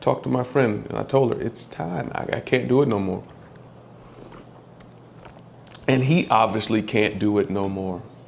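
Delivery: emotional, heavy-hearted voice. Speaker telling how she told her friend it was time, getting emotional. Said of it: "I'm getting emotional again".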